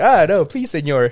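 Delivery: high, begging, pleading voice. Retelling how a friend begs when threatened: imitating a friend pleading. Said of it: "He's like".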